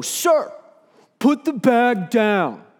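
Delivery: mock loud, booming, high-pitched voice. Retelling how someone called out to him as he walked away, loud booming voice. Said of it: "this loud, booming voice go".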